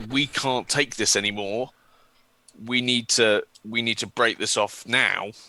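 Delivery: ordinary talk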